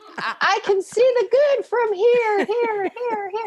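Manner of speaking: high, slow, mocking put-on voice.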